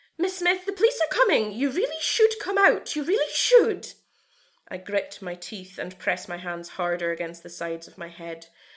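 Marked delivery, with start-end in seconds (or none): 0.2-3.9 very high, shrill, wavering, overly friendly sugary voice. A nurse speaks through the keyhole to Miss Smith, overly friendly high-pitched voice. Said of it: "and the voice of an overly friendly woman blows through the keyhole. / It doesn't block her out. / The shake in the nurse's voice makes the lava fume in the pit of my stomach. / The little high-pitche".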